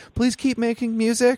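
voice breaking into a very high squeak. Describing what they tell a band when nervous, acting out a cracking voice. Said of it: "my voice cracks".

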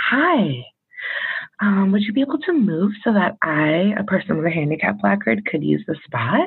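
gentle, patient, calm, soothing therapist voice. Asking a driver to move from a handicap spot, in put-on therapist voice. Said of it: "I start with my therapist voice, which is like".

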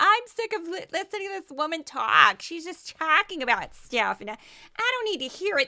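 play-acted irritated, sick-of-it tone. Mimicking podcast listeners tired of hearing the host, in a mock-annoyed voice. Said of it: "That's my annoyed voice".

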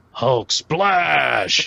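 rough, creaky rasping voice, "splash" drawn out. Showing the game rule with an example answer: Hulk impression. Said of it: "in your best Hulk impression".

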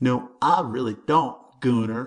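slow, lilting, dim-witted drawl. Jimmy answers the big redneck in front of the hyenas, in a mocking ignorant drawl. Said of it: "lilting his voice into an ignorant drawl".

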